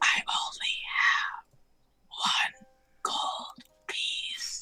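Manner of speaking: hushed, soft, very slow whisper. Voicing a character who whispers to a party member: whispering in character. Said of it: "whisper something to, like, Nyx's, uh, ear and just say".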